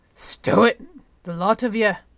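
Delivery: sharp bark at full, very loud volume. Reading a story, a character pulls two people apart as they argue: barked. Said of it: "Mwalai barked".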